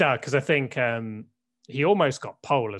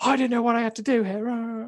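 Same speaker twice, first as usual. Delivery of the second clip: mock whinge, high and confused. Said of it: "And he was like".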